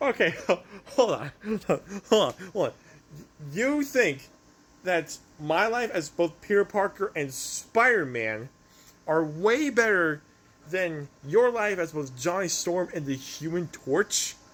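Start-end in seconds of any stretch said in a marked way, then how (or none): 0.0-2.7 talking through laughter. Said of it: "you made me laugh".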